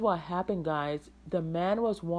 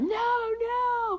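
put-on very high-pitched, drawn-out, stretched scream. Recounting a street scare involving a baby, retelling screaming no. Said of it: "I was like screaming like".

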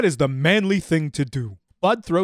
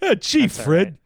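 put-on cartoon caveman voice, higher; 4 semitones higher than usual. Doing a Barney Rubble bit after joking about sounding like him. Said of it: "I'm sounding a lot like Barney Rubble".

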